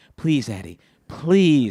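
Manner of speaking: begging, imploring voice. Retelling begging a parent for game money: imitating own childhood begging. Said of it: "I begged my dad".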